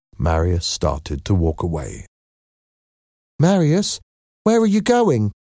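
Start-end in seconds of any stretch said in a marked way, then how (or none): 3.4-5.3 worried, anxious, very high-pitched voice. Éponine calls after marius as he starts to walk away, anxious. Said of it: "Asked Éponine anxiously".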